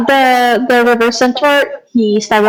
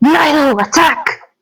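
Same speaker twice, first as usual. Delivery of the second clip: furious, angry, seething hissed voice; 4 semitones higher than usual. Commanding the creature Nilo to attack in character: angry seething hiss. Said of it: "he's angry and he's seething and he hisses out".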